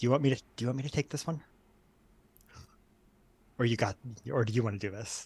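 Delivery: hushed, put-on half-whisper. Playing a character who half-whispers a question into Kai's ear: half-whispering in character. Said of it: "I'm gonna whisper in Kai's ear".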